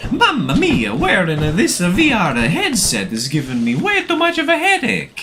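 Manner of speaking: high, loud, swooping, sing-song, hammed-up bad Italian accent. Speaker wearing a VR headset goes full Italian, in a bad Mario impression. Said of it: "I could do that really bad Mario impression".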